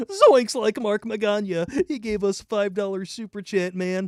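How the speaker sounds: high-pitched, loud, cartoonish voice. After saying he can do Shaggy, reading the next super chat in a Shaggy voice. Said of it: "I could do Shaggy from Scooby Doo".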